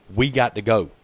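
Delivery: ordinary talk, nothing marked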